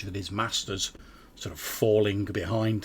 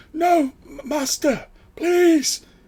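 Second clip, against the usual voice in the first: groveling, desperate pleading, very high and very slow; 8 dB louder than usual. Voicing a wounded enemy on his knees: pleading on his knees. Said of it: "Takrid's literally on his knees".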